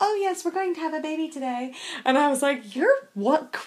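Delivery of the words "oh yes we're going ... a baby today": very sweet, sugary, high voice. Retelling a woman's answer when told the story, imitating Sister Morningstar's sweet voice. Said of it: "in her very sweet voice".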